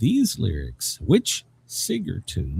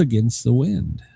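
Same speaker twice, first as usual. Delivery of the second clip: ordinary delivery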